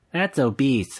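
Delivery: small, machine-like robot announcer voice. Retelling what Wii Fit says about being obese: Wii Fit robot voice. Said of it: "the little robot voice goes".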